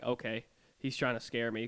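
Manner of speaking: normal talking voice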